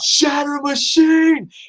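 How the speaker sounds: play-acted, thrilled, very high-pitched shriek. Recalling watching a match, re-enacting an excited scream. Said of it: "I remember just screaming out".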